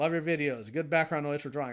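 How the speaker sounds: ordinary talk, nothing marked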